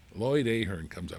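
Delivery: ordinary talk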